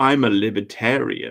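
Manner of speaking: proud, self-important tone, like a badge of honor. Retelling what a guy kept saying, imitating the guy's way of saying it. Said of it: "like this".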